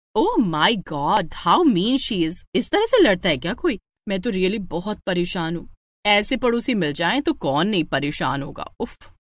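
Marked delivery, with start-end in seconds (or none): none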